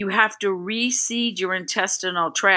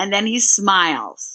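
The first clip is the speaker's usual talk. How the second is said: usual speaking voice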